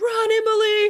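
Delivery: shrill, very high, loud scream. Retelling running from swarming wasps, imitating her own scream. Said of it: "And I'm screaming".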